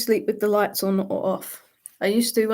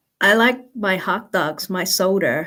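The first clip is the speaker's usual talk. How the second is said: put-on American accent; 4 dB louder than usual. Asked to repeat a line in an American accent, American accent. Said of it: "Say that in an American accent again".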